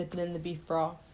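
ordinary talk

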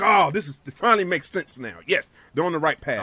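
ordinary talk

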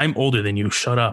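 aggressive, combative tone. Answering another speaker who just said he is old: aggressive. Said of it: "you sounded very aggressive".

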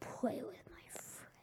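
quiet whispering. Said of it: "I'm whispering, like, sometimes".

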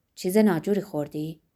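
plain reading voice

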